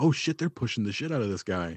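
plain

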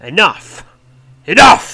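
very loud, high, furious bellowing roar. Reading a story aloud, voicing Osborak roaring. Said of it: "Roars Osborak".

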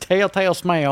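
put-on American southern accent. Trying to say a tricky phrase fast, the speaker says it in a southern accent. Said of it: "I said it in a southern accent".

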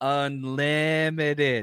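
slow, drawn-out, stretched word. Retelling a coach's one-word answer about a player: Russell Wilson impersonation. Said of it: "that's my best, uh, Russell Wilson, uh, impersonation".

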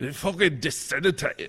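put-on Scottish accent. Answering a request to say disseminate: put-on Scottish accent. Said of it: "say that in your Scottish accent".

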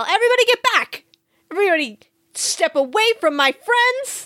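full-on, high-pitched in-character yell. Voicing a character holding a knife to a captive's throat: yelling in character. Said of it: "I put my knife to his throat and I yell".

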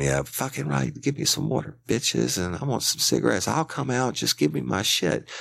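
acted-out, very high, ragged, rough yelling. Telling how a man hiding in the dark demanded water, retelling a man screaming. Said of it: "he was talking and screaming".

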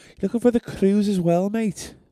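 put-on Liverpudlian accent. Podcast host trying out accents, in a Liverpudlian accent. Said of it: "I might talk in Liverpudlian".

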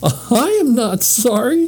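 laughing through words. Narrator reads the lady's reply to Henry, laughing. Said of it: "said the lady, laughing".

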